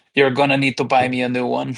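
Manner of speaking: reluctant, begrudging aside. Acting out a character speaking to another, muttering under breath. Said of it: "under my breath".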